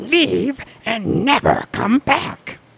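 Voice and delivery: high, very slow character voice, every word drawn out. Retelling a scene where a character tells someone to leave: Gollum voice. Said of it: "he does Gollum voice".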